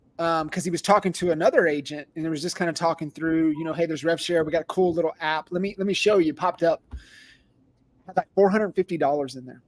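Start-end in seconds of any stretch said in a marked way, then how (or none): none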